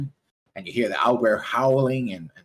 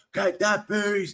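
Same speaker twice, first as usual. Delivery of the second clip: high, far-off shouting. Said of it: "like, shouting".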